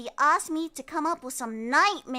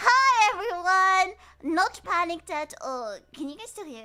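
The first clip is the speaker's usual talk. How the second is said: crackly, cracking, raised sick-sounding voice; 5 semitones higher, 5 dB louder than usual. Greeting everyone and doing an audio check while still sick, crackly sick voice. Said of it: "My voice is a little bit crackly".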